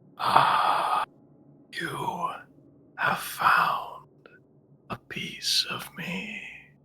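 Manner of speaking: dry, crunchy yet smooth voice, drawn way out. Voicing a fog entity found by the players: crunchy, dry, smooth and slow voice. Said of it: "Crunchy, dry, but smooth and slow".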